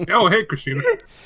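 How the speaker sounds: talking with mouth full of food. Greeting someone while eating pizza: talking with mouth full. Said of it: "his mouth is full of pizza".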